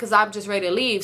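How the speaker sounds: ordinary talk, nothing marked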